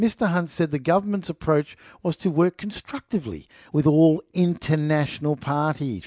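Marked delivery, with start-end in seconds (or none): none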